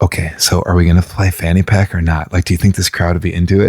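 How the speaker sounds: mock whispering. [name] recounts whispering to Neil during their set, retelling a whisper. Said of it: "I'm like trying to whisper".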